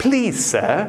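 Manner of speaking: put-on British accent. Showing how a polite written request sounds in the inner voice, put-on British accent. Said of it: "my inner voice turns British".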